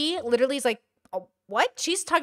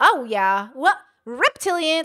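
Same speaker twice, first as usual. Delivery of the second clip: loud, high-pitched comedic character voice; 4 semitones higher, 5 dB louder than usual. Imitating another speaker's comedic character: imitating her loud high comedic voice. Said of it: "It's up here".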